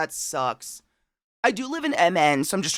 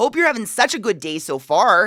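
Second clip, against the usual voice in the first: put-on Minnesotan Midwestern accent; 5 semitones higher, 5 dB louder than usual. Reading a greeting to Katie aloud, in a put-on Minnesotan accent. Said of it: "Very Minnesotan".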